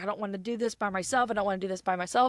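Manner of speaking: fast, shaky, emotional voice close to tears. Retelling what she said before getting on a ride: imitating someone shaky and emotional. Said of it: "she's just like shaky and emotional".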